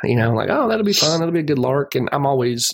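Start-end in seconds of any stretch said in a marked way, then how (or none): 0.5-1.9 put-on cheerful, happy, lifted, eager voice. Speaker acts out their own reaction to a superhero movie, acting out getting happy. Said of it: "I get happy".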